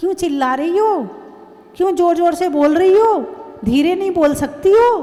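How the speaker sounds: put-on child voice, sharply snapping back.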